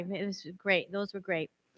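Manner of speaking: crying while still talking, tearful and choked up. Thanking the previous speaker after a graduation speech, tearful, crying. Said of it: "I'm, like, crying".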